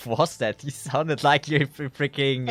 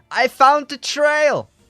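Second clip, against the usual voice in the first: very high, loud scream; 12 semitones higher, 7 dB louder than usual. A player's character too far up calls to the others below, screaming down. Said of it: "I'm gonna scream down".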